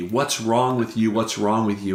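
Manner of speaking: normal talking voice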